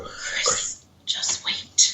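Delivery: breathy, hushed whisper. Describing an EVP caught as they started recording, mimicking the whispery voice. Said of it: "you hear a whispery voice go".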